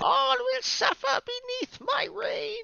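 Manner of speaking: very high, squeaky, rough, tiny-sounding yell. Discussing a card, a speaker voices a mini Griselbrand with a high-pitched shout. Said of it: "a mini Grizzlebrand shouting with a high pitched voice".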